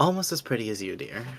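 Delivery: soft half-whispered aside, breath only. A player's character speaks quietly to Callisto in a smirking half-whisper. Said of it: "sort of whisper to Callisto".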